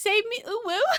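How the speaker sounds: put-on very high, babyish, cutesy uwu baby voice. Joking with friends about how he sounds, a speaker puts on a baby voice. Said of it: "He sounds like baby".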